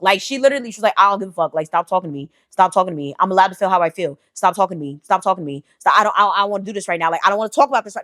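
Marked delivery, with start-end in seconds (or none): 1.0-8.0 play-acted angry outburst at breaking point. Retelling a coworker refusing an intervention: imitating someone about to crash out. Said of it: "she's really about to crash out".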